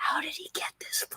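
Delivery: hushed whisper under the breath. Voicing a librarian asking another librarian a question: whispering. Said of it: "whispers to the first librarian".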